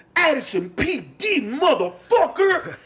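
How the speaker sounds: very high, swooping, thrilled, excited battle cry yell. Retelling how a cop slammed a man down: imitating an excited cop yell. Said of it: "The excitement that he said it with".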